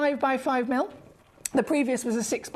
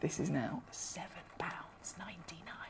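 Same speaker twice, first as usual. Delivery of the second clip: hushed whisper, lower and quieter; 6 semitones lower, 15 dB quieter than usual. Announcing a low price to collectors watching: whispering. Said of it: "I don't know why I'm whispering".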